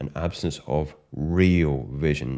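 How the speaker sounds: real drawn out slow and heavily stressed. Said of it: "I do stress the word real".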